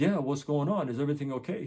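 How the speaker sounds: ordinary delivery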